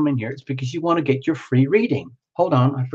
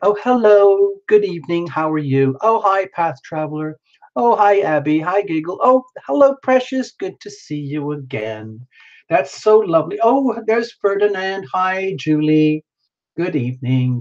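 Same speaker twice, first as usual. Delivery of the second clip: nice, gentle delivery; 3 semitones higher than usual. Showing how the usual greetings to the chat go: imitating own gentle greeting. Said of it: "we have a nice gentle thing like".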